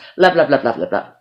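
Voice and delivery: very fast, tumbling rapid-fire repetition. Saying a favorite word over and over as a demonstration, very fast. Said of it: "Say it real fast three times".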